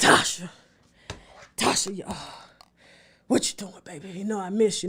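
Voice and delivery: deep, breathy, murmured voice. Retelling a phone call from her biological father, imitating his deep voice. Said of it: "he got a real deep voice".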